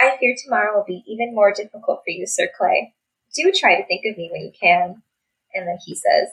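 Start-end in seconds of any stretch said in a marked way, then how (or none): none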